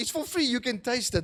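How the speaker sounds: put-on high, excited, blurted-out child's shout. Retelling how a son shouted to his doubting sister: imitating a child shouting. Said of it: "He just shouted out".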